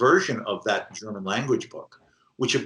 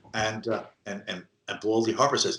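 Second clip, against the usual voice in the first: plain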